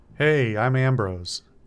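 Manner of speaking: put-on loose Midwestern accent, words tumbling together. Narrator voicing a hungover man who greets you: Ambrose's loose Midwestern accent. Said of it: "his words piling together in a loose Midwestern accent".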